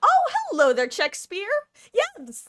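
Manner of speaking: very high, loud, swooping sing-song voice. Greeting someone excitedly, voice going really high. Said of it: "my voice got really high there".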